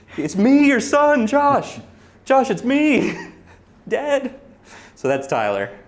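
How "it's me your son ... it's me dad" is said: shrill, booming, very loud, high-pitched, drawn-out screaming. Retelling how a friend shouted at a saxophone player: imitating a friend screaming. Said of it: "he's screaming at the sax player".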